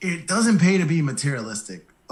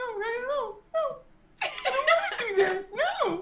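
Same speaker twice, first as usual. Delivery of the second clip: put-on tiny, very high, soft little girl voice; 5 dB quieter than usual. Imitating the listener's inner fears: imitating an inner little girl voice. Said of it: "that's your inner little girl voice".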